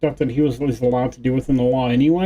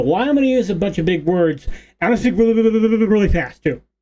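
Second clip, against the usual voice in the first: high, snide, sarcastic put-on mocking voice; 5 semitones higher than usual. Imitating a debater's style of arguing: mocking imitation of a debater. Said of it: "go against somebody and go".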